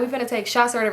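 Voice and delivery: ordinary talk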